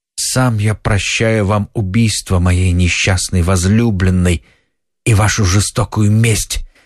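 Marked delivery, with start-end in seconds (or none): none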